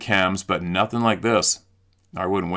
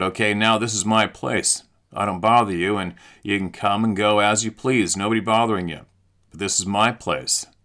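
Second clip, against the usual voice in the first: ordinary talk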